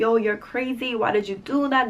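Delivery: ordinary delivery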